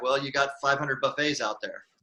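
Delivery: ordinary talk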